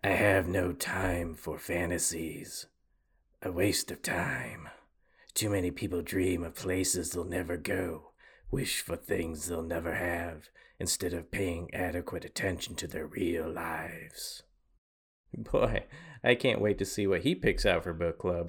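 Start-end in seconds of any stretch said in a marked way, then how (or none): 0.0-14.4 dropped, deep heroic voice. Speaker quoting a by-the-book character's lines, Batman voice. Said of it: "I realize I sound like Batman".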